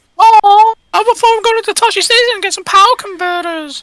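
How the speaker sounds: camp voice pitched way up high. Quoting a remembered film line: imitating a high-pitched camp Luke Skywalker line. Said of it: "it is proper high-pitched".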